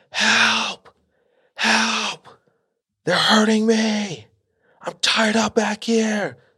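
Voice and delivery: mock very high, drawn-out bloody-murder screaming. Retelling how Joe screamed to a cop at the next gas pump, imitating someone screaming. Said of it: "Screaming at the top of his lungs".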